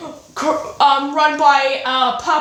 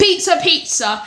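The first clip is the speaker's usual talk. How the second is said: put-on Italian accent, done for show; 3 semitones higher than usual. Retelling a story about an italian race car, doing a put-on italian accent. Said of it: "let me do the Italian accent".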